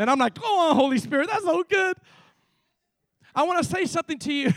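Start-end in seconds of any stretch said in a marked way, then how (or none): 0.4-2.0 high, fired-up, worked-up shout. Retelling shouting at oneself during study time: imitating own shouting. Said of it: "I started shouting at myself in my study time".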